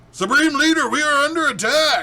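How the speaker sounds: very loud, very high, shrill American soldier voice. Voicing a random Hydra trooper in a scene, American-accented Hydra trooper. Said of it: "He doesn't have a German accent".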